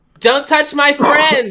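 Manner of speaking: shrill, very high, stretched-out, drawn-out yell. Voicing a character firing a spell at a grappler: yelling in character. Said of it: "she's gonna yell".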